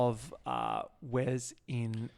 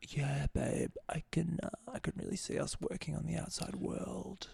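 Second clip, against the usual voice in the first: put-on soft, whispered man-baby voice. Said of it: "soft baby voice ... man baby voice".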